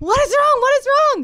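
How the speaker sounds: shrill, frantic, very high, loud panicked shout. Retelling husband rushing to a daughter at night: imitating husband's panicked voice. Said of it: "You can hear the panic in his voice".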